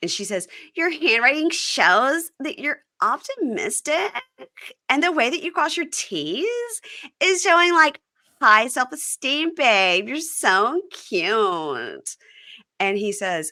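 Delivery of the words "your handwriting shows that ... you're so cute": put-on high baby voice, vocal fry, drawn-out t sounds. Speaker quoting what Mary Payne says to him, imitating how Mary Payne talks. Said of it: "this is how she talks".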